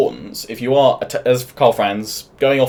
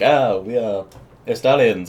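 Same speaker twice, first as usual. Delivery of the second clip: put-on French-accented delivery. Speaker voicing a game faction while describing it, in a French accent. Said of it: "That's a French accent".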